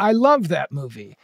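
English spoken brokenly. Retelling what a man who stopped the speaker said, imitating broken english. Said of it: "he goes in broken English".

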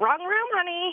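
put-on high-pitched elderly man's voice. Telling others about climbing into the wrong bed, quoting a man: old man voice. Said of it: "I hear this old man voice go like".

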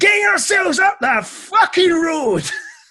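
high, slow, furious shout. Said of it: "and I shouted".

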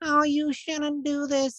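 weak, feeble little whine, very high-pitched. Speaker voicing young people's weak little conscience: weak whining conscience voice. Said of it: "this whining voice".

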